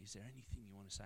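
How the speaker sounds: fast, quiet, soft whisper.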